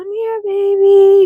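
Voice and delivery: mock high-pitched call with "baby" drawn out. Retelling trying to get a baby to come over, calling to a baby. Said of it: "I'm calling the baby".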